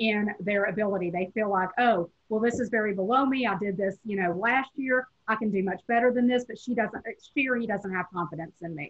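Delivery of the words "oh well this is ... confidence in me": ordinary talk, nothing marked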